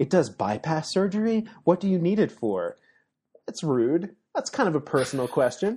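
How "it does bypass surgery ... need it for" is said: mock pointed, accusing, swooping high tone. Recapping a film scene, quoting Shaw questioning another character, retelling Shaw's accusatory tone. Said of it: "Shaw takes this accusatory tone with Vickers".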